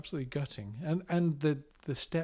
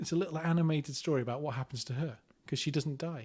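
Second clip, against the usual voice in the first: ordinary talk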